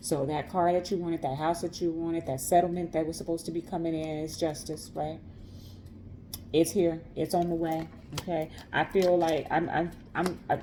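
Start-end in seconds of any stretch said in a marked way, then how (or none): 8.7-10.6 slow, halting stutter, stuck on a word. Speaker addressing listeners of a message, stuttering. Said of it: "I'm stuttering".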